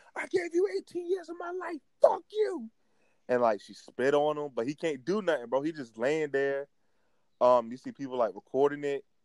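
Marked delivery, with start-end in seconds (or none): 0.2-2.7 very high, enraged, furious screaming. Retelling a video of a woman standing over a man's body: retelling a woman's yelling. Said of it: "She's like yelling like".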